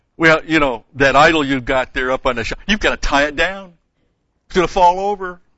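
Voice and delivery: very loud, high, mocking sarcastic tone. Explaining how the prophets mocked idol worshippers: retelling a very sarcastic jab. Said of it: "very sarcastically they go after them".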